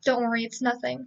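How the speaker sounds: ordinary delivery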